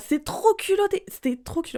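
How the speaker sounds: heated, worked-up outburst. Ranting about men with double standards, getting angry. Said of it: "je m'énerve, je m'énerve toute seule".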